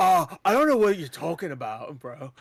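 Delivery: surfer-style voice. Imitating how an actor talks in the original Venom, Keanu Reeves surfer-dude voice. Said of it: "it goes into this like surfer dude, the way he's talking".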